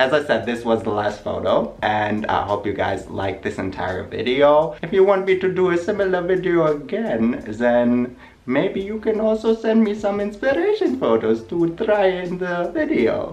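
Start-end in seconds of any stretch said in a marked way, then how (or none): 4.8-13.3 put-on voice, pitched high. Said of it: "Why are you talking like this?".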